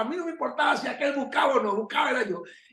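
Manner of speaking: high, fast, eager, laughing rush.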